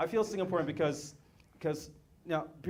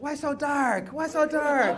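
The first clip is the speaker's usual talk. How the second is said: very high, very loud, very slow salesman voice; 10 semitones higher, 8 dB louder than usual. Retelling how a salesman in Indonesia called out: imitating a skin cream salesman. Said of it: "he said".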